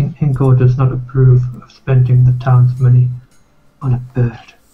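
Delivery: whispering in a put-on voice. Voicing a character who whispers disapproval into another's ear: whispering in character. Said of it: "King Kingo will just whisper in Australian's ear".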